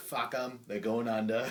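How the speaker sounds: full put-on Boston accent, angry. Retelling what an angry reality-show contestant shouted: imitating an angry Boston accent. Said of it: "this Boston accent mode".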